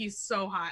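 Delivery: ordinary delivery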